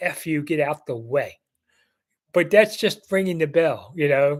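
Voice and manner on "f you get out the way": normal talking voice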